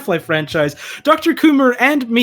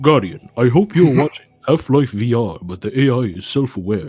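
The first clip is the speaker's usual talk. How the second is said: put-on commanding character voice, pitched lower; 7 semitones lower than usual. Answering a viewer question on other voices, doing a Lance Reddick impression. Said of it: "your Lance Reddick impression".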